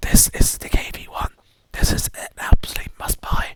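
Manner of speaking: hushed, secretive, conspiratorial whisper. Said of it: "I'm being quiet because".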